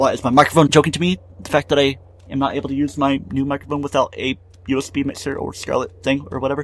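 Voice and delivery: ordinary talk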